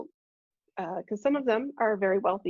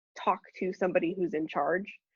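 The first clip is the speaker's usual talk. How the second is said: ordinary talk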